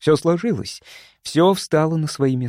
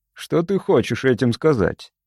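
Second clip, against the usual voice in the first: ordinary delivery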